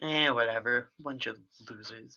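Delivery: soft, quiet mumbling to himself. Playing a clown after a failed party trick: mumbling to himself. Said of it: "he mumbles to himself".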